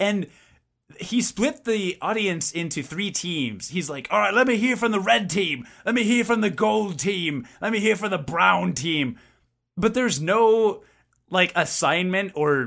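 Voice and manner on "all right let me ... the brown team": mock terrible British accent, higher. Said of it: "he's speaking in a British accent".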